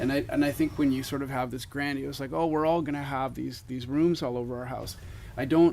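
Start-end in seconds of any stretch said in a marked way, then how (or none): none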